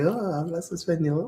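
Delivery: excited exclamation. Retelling how the waitress reacted to hearing Spanish: imitating excited waitress. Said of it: "she gets all excited".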